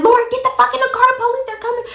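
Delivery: play-acted very high, shrill scream. Recounting a past event, the speaker re-enacts screaming at her: retelling screaming. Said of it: "I'm screaming at her like".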